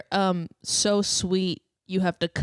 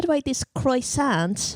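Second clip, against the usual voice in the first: put-on British accent spoken with a raised pitch; 6 semitones higher than usual. Acting out a made-up Pirates of the Caribbean deleted scene, Keira Knightley British accent. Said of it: "an impression of a British person eating a croissant".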